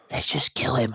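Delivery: deep, gravelly, raspy growling demon voice. Describing shadowy silhouetted figures, imitating them in a deep raspy demonic voice. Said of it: "They had this deep, raspy, demonic voice".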